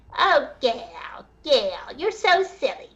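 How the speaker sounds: very slow, drawn-out, mocking voice. Speaker corrects someone's impression of a man, showing how he really talks: mocking impression. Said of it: "Satan's voice is very high pitched".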